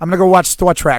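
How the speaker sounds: put-on loud, belted-out Boston accent. Imitating dad saying he will watch a show: imitating dad's Bostonian-like accent. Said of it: "my dad's accent is a weird combination of what sounds like Bostonian".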